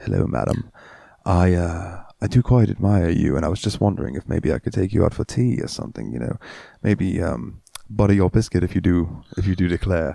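bad seductive fake English accent. Speaker demonstrating how they would talk in an English accent; bad seductive English accent. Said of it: "my English accent, even though I'm not very good at it".

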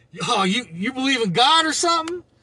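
put-on high, mocking, jeering laugh. Retelling a stranger who laughed at the car stickers, imitating mocking laughter. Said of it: "he start laughing like".

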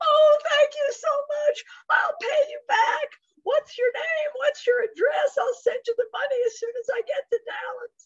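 tearful, gushing, emotional delivery.

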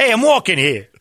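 high, put-on New York Italian accent.

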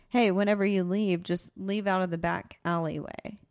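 ordinary talk

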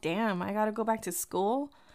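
ordinary talk

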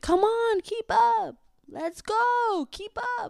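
very high, long-stretched, drawn-out yell. Recounting falling behind while snorkeling, voicing friends yelling: retelling friends' yell. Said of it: "my friends yelling at me like".

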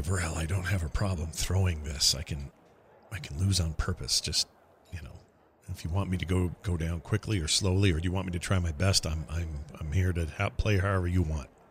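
speaking quietly. Speaking in character to varel so judges won't hear: speaking quietly. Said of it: "I'm gonna quietly go".

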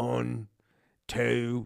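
put-on British accent. Retelling how their dad counts whenever he does a british accent, imitating dad's british accent. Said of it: "whenever he does a British accent".

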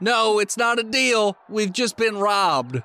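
shouted, drawn-out call. Voicing restaurant employees yelling back at intruders: employees yelling back. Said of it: "They're yelling back".

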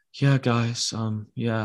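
gentle, slow, low-key, unhurried voice. Imitating a soft-spoken hockey player: soft-spoken Petrie voice. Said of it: "he's got the soft voice".

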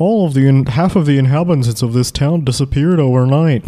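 formal newscaster voice, news anchor delivery. Acting out a newspaper story for the others, in a newscaster voice. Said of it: "I don't know why I'm doing newscaster voices".

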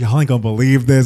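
put-on excited voice. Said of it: "you could just hear the excitement in her voice".

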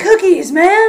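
very loud, high yell, carrying far. Retelling another kid's reply from across a parking lot: imitating a yell across a parking lot. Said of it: "this other kid yells from across the parking lot".

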